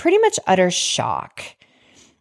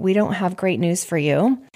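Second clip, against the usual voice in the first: plain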